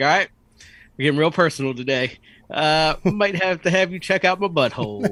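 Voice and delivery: mock-nonchalant, casual, a little sarcastic. Retelling what he told her when he went in, acting out nonchalant sarcasm. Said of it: "kind of nonchalant, a little sarcastic".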